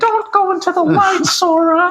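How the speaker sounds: very high-pitched, earnest voice. Quoting a serious scene from a game: very serious Mickey Mouse voice. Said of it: "he's, like, very serious".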